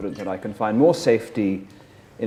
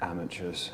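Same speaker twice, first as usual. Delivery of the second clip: very quiet mutter, barely audible, under the breath; 3 semitones lower, 12 dB quieter than usual. Voicing a character who closes his eyes and mutters to himself: muttering to himself. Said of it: "he just mutters".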